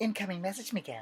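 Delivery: as soft as possible, gentle, high-pitched delivery. Showing a voice after offering to do it: Lila voice. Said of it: "Lila mode".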